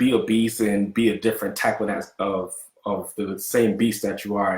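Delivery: plain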